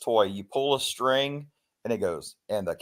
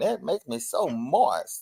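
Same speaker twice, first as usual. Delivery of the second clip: put-on high, very slow, drawn-out old lady voice; 5 semitones higher than usual. Recalling a scene from the Nutty Professor: imitating old lady from the Nutty Professor. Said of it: "the old lady sitting around the table and she going".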